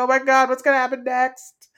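high, scared, frightened fretting tone. Retelling watching the show huddled under covers: imitating own scared reaction. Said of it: "I'm just scared".

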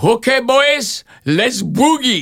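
put-on very high-pitched Polish accent. Recalling the first movie, the speaker quotes Sam starting the take, imitating Sam's Polish accent. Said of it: "I hear this Polish voice go".

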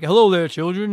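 put-on cartoon cook voice. Retelling how Chef greets the children: imitating Chef. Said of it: "So then Chef would be like".

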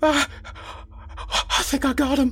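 breathless gasp. Narrator reading a straining character's line, gasping. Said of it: "he gasped".

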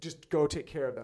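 normal talking voice

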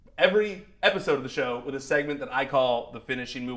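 ordinary talk, nothing marked

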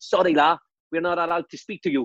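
put-on Scouse accent on every word. Retelling Tommy answering the door to the ref, the speaker uses Tommy's Liverpudlian accent. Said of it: "He used to speak with that stupid Liverpudlian accent".

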